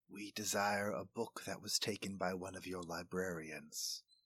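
hushed quiet voice. After being shushed, your character answers the group: lowered voice. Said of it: "lower his voice and say".

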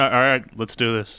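ordinary talk

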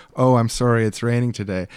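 ordinary talk

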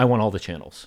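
ordinary delivery

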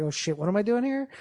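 normal talking voice

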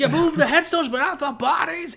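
very high-pitched, furious, shrill screaming. Describing the Poltergeist scene where Craig T. Nelson screams at his boss, mock screaming. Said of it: "screaming at his boss".

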